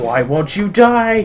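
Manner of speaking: high, stretched-out, drawn-out scream. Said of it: "Helga just screamed out".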